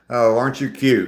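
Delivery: put-on Northern US accent, gently patronising. Showing how a Northerner would say the phrase: imitating a Northerner. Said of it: "that's probably how a Northerner would say it".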